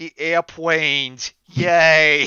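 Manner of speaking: very loud, high, dumbed-down reading, drawn-out "yay". Teasing another reader who misread a word: mocking Teresa's reading level. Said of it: "reading at, like, Teresa's intellectual level".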